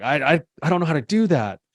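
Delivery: voice catching, stumbling. Retelling a client's reply in a session: imitating someone choked up. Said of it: "he started getting choked up with me".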